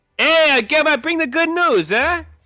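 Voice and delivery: acted East Coast accent, high. Describing a scene where Jesus arrives and speaks, Jesus with East Coast accent. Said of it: "he speaks with an American East Coast accent".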